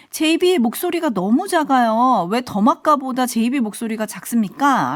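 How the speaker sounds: usual speaking voice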